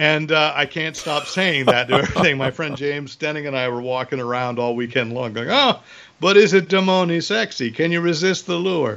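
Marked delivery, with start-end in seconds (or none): 5.5-9.0 over-the-top fake Italian accent, pitched up. Retelling what the speaker and a friend kept saying all weekend, in an Italian accent. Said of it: "Italian listeners who are offended by that accent".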